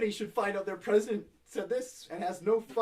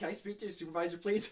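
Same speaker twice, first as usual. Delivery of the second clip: ordinary talk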